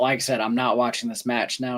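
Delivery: ordinary delivery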